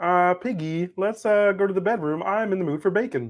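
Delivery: high-pitched frog puppet voice. Showing off a good Kermit impression after being praised for it, as Kermit talking to Piggy. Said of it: "I got a good Kermit".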